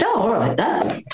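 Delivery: plain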